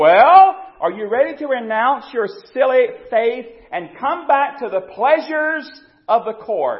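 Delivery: very loud, high, scornful mocking tone. Retelling how the Tsar taunted the imprisoned countess: imitating a mocking taunt. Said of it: "he smiled mockingly to her and said".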